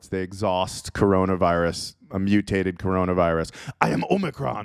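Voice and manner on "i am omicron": acted robotic villain voice. Joking that a virus variant name sounds like a villain: Transformers villain voice. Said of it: "sounds like a villain from the Transformers franchise".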